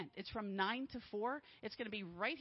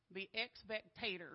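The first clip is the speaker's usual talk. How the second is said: put-on American Southern accent; 2 semitones lower, 4 dB quieter than usual. Speaker quotes a camp meeting announcer, imitating a southern accent. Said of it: "let's see if I can do this with their southern accent".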